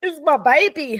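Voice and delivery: tearful voice, crying through words. Talking about a lost child in an interview, crying while talking. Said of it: "swore I wasn't gonna cry, sorry".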